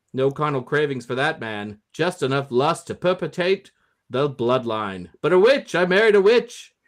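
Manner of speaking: put-on old-movie mid-Atlantic voice. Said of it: "I have to find a special voice for this one 'cause this is an old movie".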